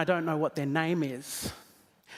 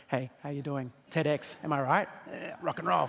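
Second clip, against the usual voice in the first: dropped, casual, chatty conversational voice; 3 semitones lower, 4 dB quieter than usual. Showing how to talk to someone in the front row: dropped, conversational voice. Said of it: "I can drop my voice a little bit, get a little more conversational".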